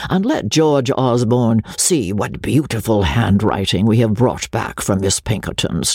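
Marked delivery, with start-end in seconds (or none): none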